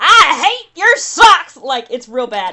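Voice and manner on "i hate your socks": put-on very loud, high, stretched-out, furious shout. Describing a grievance airing where someone yells at her husband, retelling an angry yell. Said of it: "Tahani stands up and yells at her husband".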